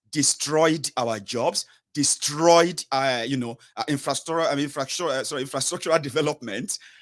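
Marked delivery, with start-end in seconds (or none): 5.1-6.8 words rushed out very fast. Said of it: "I don't know why I'm speaking too fast".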